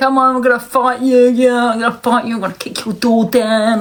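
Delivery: tough-guy gangster voice, wannabe tough talk. Mocking people on TikTok who act like gangsters: mocking TikTok gangster talk. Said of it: "act like they're a gangster".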